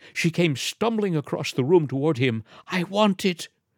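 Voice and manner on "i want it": plainly stated without fuss, simple, high-pitched. A woman comes stumbling across the room toward a man, speaking quietly. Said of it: "she said quietly".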